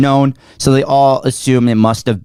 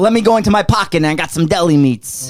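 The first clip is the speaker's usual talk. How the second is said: put-on Italian accent, pitched higher; 6 semitones higher than usual. Taking a turn in a round of impersonations, doing an Italian impersonation. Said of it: "Shane just had a fucking Italian stroke".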